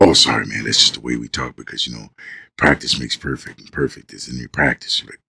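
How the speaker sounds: sultry, seductive, very low voice. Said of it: "why are you talking to me like that".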